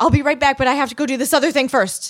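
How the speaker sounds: high, loud, panicked rushed delivery.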